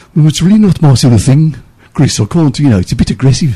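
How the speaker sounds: exaggerated Brummie accent. Retell Muff's answer to Chris on the walk back to the office, in Muff's big Birmingham accent. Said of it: "in his big, you know, Birmingham accent".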